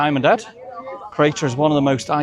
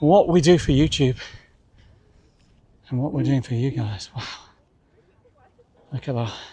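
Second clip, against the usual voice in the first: breathless, out of breath. Filming for YouTube while climbing to a summit, out of breath. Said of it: "I am definitely out of breath now".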